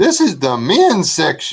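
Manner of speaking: rather loud, pitched high. Retelling Missus S speaking up in a store's sock aisle: rather loud voice. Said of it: "in a rather loud voice".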